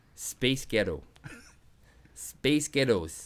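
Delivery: attempted American accent. Saying a phrase again as the other speaker asks, in an american accent. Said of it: "in an American accent".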